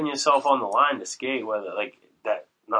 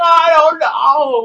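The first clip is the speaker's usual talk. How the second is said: mock, very high, very loud frantic panic; 11 dB louder than usual. Acting out how a child would answer after a fall: imitating someone freaking out. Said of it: "freaking out".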